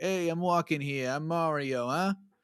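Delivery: put-on vague, loose hint of a Long Island, New York accent. Describing the accent Mario has, then doing it: vague Long Island accent. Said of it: "it's vaguely Long Island, New York".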